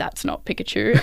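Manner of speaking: whispered, hushed mutter under the breath. Retelling what their partner said sitting next to them, retelling a mutter under breath. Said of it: "under his breath".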